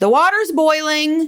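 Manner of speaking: put-on yell. Telling a story, the speaker acts out a yell from the kitchen: retelling Robin's yell. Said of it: "you hear Robin yell from the kitchen".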